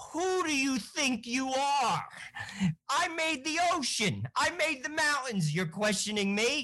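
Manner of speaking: very high, put-on New Jersey accent. Retelling God's reply to Job, giving it a put-on New Jersey accent. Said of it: "I'm going to give it like the Jersey spin".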